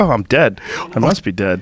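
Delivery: put-on shocked disbelief. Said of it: "You'd be like".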